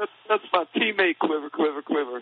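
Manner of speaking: put-on blubbering through sobs, high, weepy. Mocking a player who cried defending his quarterback: mock crying Terrell Owens. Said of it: "everyone's joking him for crying".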